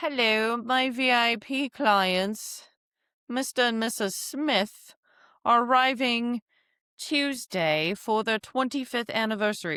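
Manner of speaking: terrible, put-on British accent, slow. Demonstrating a professional email to the sales director, in a terrible British accent. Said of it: "We're doing a terrible British accent".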